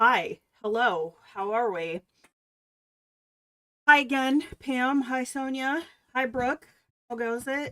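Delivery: winded, puffing, breathless, out-of-breath voice. Greeting several people by name after running to the kitchen, out of breath. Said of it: "I sound out of breath".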